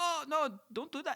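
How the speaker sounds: put-on French accent, very high pitch. Retelling how Macron answered a tariff threat: Emmanuel Macron French accent. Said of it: "He does his accent".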